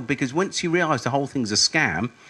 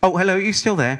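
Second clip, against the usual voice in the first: bright, delighted, pitched-up, really pleased tone; 5 semitones higher, 4 dB louder than usual. Showing how to pick up a caller left on hold, really pleased to hear from them. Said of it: "always sound like you're really pleased to hear from them".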